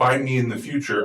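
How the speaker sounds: ordinary delivery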